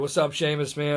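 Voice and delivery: ordinary talk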